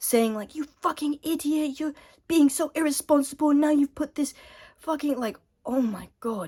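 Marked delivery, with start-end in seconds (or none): 0.5-5.2 put-on furious, high, angry yelling tirade. Retelling the bus driver coming upstairs to yell at the speaker, retelling angry yelling. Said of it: "starts yelling at me".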